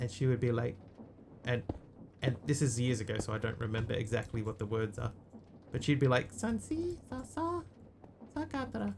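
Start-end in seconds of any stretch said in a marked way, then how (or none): 6.3-8.9 woman's voice, pitched very high. Recalling words heard years ago, imitating a high-pitched lady's voice. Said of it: "a like a high pitched lady's voice".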